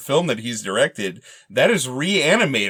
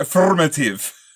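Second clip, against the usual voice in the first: terrible, heinous, laid-on put-on Russian accent; 3 semitones higher than usual. Imitating a movie villain's accent: Command and Conquer Russian accent. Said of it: "He has that Command and Conquer accent".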